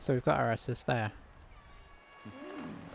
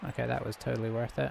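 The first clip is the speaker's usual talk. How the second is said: ordinary talk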